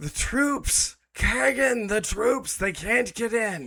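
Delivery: frantic, panicked yell, very high and very loud. A game master voices a priest running in from the back hallway, yelling.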